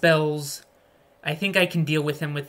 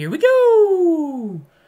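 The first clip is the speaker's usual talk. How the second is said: terrible high, loud belted character voice, go drawn out; 13 semitones higher, 8 dB louder than usual. Starting a raid for the chat: terrible Mario impression. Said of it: "My Mario impression is terrible".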